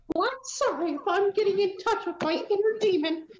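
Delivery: high cartoon mouse voice.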